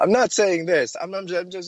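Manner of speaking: mocking high stammering voice.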